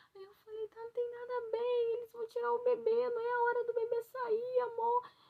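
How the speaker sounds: play-acted very high, heavy tearful sobbing. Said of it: "Eu chorando, chorando a beça".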